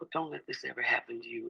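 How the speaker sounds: imitated gravelly voice. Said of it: "She had that gravel in her voice".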